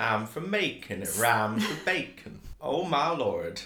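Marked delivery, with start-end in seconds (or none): 0.0-2.4 clumsy, bad attempt at American South accent. Showing a poor attempt at an accent from the south: bad southern us accent. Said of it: "an accent from, like, the South".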